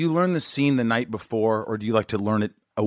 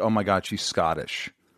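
usual speaking voice

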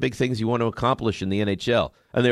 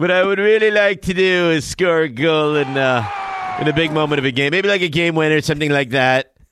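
slick, slow-witted, raised, high drawl; 5 semitones higher, 5 dB louder than usual. Imitating the other speaker's answer about NHL goals: Bill Murray in Caddyshack voice. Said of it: "Bill Murray in Caddyshack".

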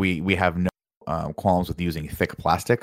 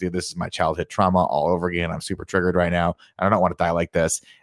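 ordinary delivery

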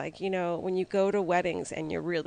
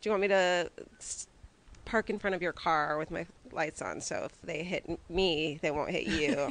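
ordinary talk, nothing marked

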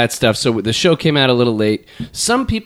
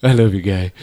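party-guy dude voice with heavy breathing; 4 semitones lower than usual. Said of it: "Oscar's the heavy breathing guy at the party".

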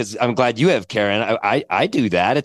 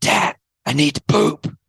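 put-on slow, hushed, whispered child's voice; 4 semitones higher than usual. Retelling what a four-year-old says on waking: imitating a child whispering. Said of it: "he'll whisper".

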